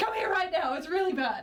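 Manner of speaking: piercing, very high-pitched, loud shrieking scream. Playing a character screaming for help after grabbing a scroll: scream. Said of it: "then I'm gonna scream".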